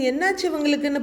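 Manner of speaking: plain reading voice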